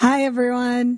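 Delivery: raspy, nearly voiceless. Saying hello to listeners while sick: barely any voice. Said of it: "Naz has barely any voice".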